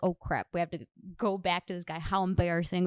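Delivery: ordinary talk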